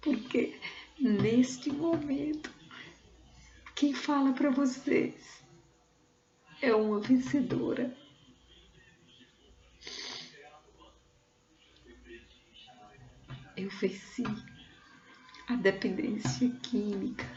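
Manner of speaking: speaking through tears. Addressing an audience in person: crying while speaking. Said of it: "Eu tô chorando também de felicidade".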